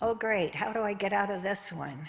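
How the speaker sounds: snide, snarky, sarcastic tone. Showing different ways to ask a question, snarky and sarcastic. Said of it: "fearfully or snarky or sarcastic? Like, for example".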